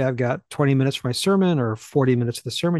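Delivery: ordinary talk, nothing marked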